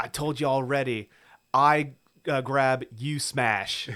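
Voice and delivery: put-on Cockney accent. Retelling what a movie character says to him, in a Cockney accent. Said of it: "let's get your Cockney accent out".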